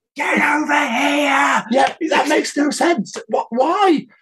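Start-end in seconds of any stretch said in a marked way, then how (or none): 0.2-1.7 quiet fake yell, much higher, slower. Demonstrating how people pretend to yell, a speaker gives a quiet pretend yell. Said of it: "we always make our voices a lot quieter".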